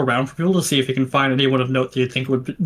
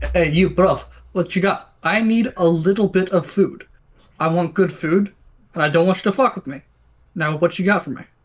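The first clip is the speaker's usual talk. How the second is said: phony, put-on Russian accent; 4 semitones higher than usual. A player's character walks up to a merchant in a role-play game, in a fake Russian accent. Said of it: "Sound like a fake Russian accent".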